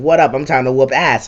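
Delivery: ordinary talk, nothing marked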